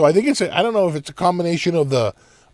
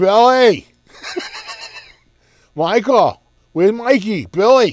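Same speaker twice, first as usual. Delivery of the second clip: put-on thick Boston accent, high and swooping; 7 semitones higher, 4 dB louder than usual. Describing people heard calling names in a background recording, thick Boston accent impression. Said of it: "It's like total Boston accents".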